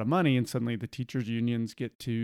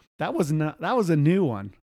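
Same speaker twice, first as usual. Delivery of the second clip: usual speaking voice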